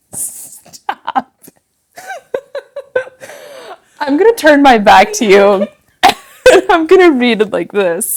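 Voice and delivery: giggling through words. Trying to start a poem reading next to someone, laughing while talking. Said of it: "let me see if I can get through this without laughing".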